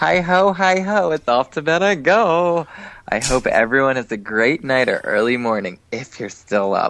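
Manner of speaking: swooping effeminate voice.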